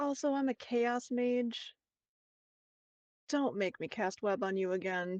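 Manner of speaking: slow, hushed, menacing half-whisper. Voicing a mage half-whispering a warning in a girl's ear: half-whisper in her ear. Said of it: "I'm just gonna whisper in her ear and be like".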